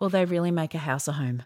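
acted deadpan delivery. Retelling how someone answered you about Nerf guns everywhere, imitate someone deadpan. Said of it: "he just looked at me deadpan".

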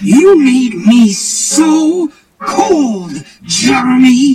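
full-throated, high, very loud enraged shriek. Narrating a story where a woman screams at Jeremy, screaming angrily. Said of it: "and she screamed".

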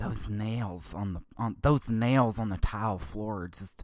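slow, drawn-out, faltering complaining tone. Retelling what the wife said, imitating the wife's voice. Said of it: "that's not how my wife sounds".

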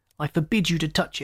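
ordinary delivery, nothing marked

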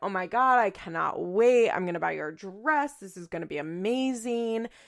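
put-on, overjoyed, excited voice. Retelling a woman's reaction, the speaker quotes her, imitating someone overjoyed. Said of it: "over the moon".

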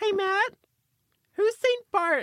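put-on very high-pitched cartoon kid voice. Teasing the other speaker, acting out Matt's line like Ralph from The Simpsons. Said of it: "you said that like Ralph from The Simpsons".

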